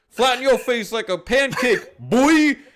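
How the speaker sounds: very high-pitched, taunting shout. Recapping a wrestling match, quoting what one wrestler shouted; retelling a shout. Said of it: "and then just shouts".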